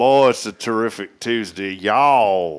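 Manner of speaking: real country accent with twang, drawn-out "y'all". Asked by another speaker to do a real country accent, country twang accent. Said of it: "You got to get that twang down".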